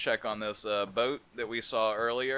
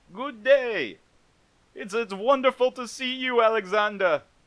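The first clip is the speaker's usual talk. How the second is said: loud, booming, very high-pitched put-on Jamaican accent; 13 semitones higher, 9 dB louder than usual. Voicing a pawn shop owner character greeting alexander, in an attempted jamaican accent. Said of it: "He is Jamaican for no reason".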